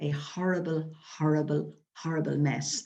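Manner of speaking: ordinary talk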